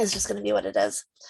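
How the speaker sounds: low voice fading to a whisper.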